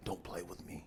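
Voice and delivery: low, soft gruff, threatening voice. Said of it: "that's the voice of".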